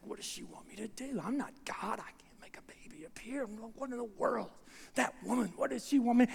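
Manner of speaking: quiet muttering. Retelling how Zechariah walks out of the house muttering under his breath. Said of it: "he's talking under his breath".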